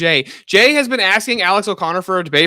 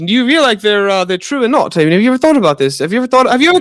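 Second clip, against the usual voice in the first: put-on posh British accent, rambling; 2 semitones higher than usual. Teasing Steelborn about talking fast, imitating Steelborn's British accent. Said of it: "in the British accent says a bunch of nothing".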